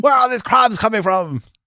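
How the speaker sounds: high-pitched, bad Irish accent.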